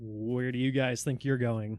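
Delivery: smug, cocky voice talking down. Voicing a bouncer who stops the party at the door: smirking bouncer. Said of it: "smirks out of the corner of his mouth".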